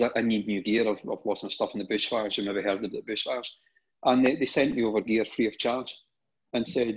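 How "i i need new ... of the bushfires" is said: normal talking voice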